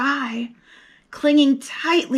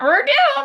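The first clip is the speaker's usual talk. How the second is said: very high, squawked parrot voice; 14 semitones higher than usual. Reading a pirate story aloud, voicing the parrot's cry in a squawking parrot voice. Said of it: "squawked the parrot".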